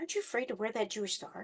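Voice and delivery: hushed, very quiet half-whisper. Retelling what a student teacher said to a son: imitating a half-whisper. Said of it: "sort of whispered to him".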